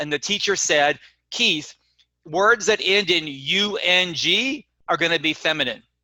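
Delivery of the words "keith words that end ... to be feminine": ordinary talk, nothing marked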